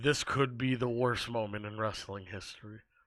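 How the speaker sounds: play-acted dry, low, flat monotone drawl. Retelling a wrestling commentator's line: deadpan JBL imitation. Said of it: "J B L deadpan just goes".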